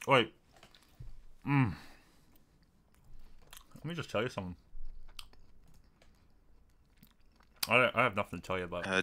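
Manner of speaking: speaking with food in mouth. Eating steak into the microphone, telling a mate something, talking with a full mouth. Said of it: "I got a full mouth".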